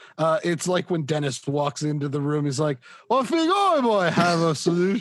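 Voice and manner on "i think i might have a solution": put-on British accent, pitched up. Quoting Dennis from It's Always Sunny walking into a room: put-on British accent as Dennis. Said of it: "That's supposed to be a British accent?".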